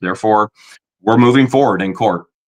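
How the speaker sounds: normal talking voice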